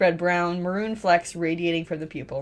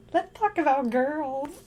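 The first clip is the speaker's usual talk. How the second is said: high, squeaky, helium-squeezed voice; 8 semitones higher than usual. Reading a story aloud, a character changes his voice: helium voice. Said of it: "makes it sound like he's saying it through helium".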